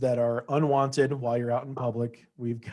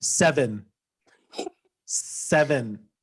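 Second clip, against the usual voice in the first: mock, exaggerated, overly precise over-enunciation; 3 dB louder than usual. Making fun of how their mom says phone numbers, imitating mom over-enunciating. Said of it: "over enunciating when you don't need to".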